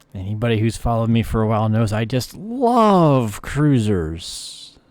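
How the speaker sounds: sarcastic, swooping, drawn-out "love". Addressing longtime followers during gameplay, sarcastic. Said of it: "I'm being sarcastic".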